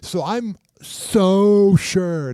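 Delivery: very slow, dripping sarcastic drawl. Doubting a couple's claim that they were separated: sarcastic voice. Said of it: "that's my sarcasm voice".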